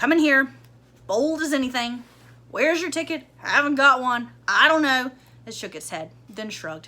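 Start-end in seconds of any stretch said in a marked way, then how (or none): 0.0-5.1 put-on loud, gruff, gloomy grumbling old dog voice. Reading a story, the narrator voices an old dog usher grumbling at Coraline, gloomy.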